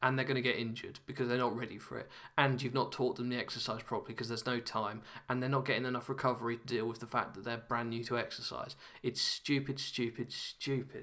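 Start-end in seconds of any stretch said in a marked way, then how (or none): 9.0-11.0 very slow, fed-up, mildly angry delivery. Speaker on a podcast, as close to angry as they get: mildly angry. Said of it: "as close as you're going to get to me being angry".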